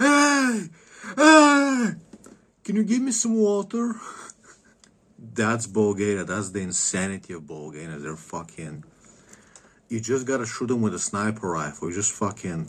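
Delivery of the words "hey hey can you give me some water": shrill, very high, slow, drawn-out screaming. Retelling a passer-by at the fence in Bulgaria asking for water, imitating a hunter screaming. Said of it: "He's like screaming".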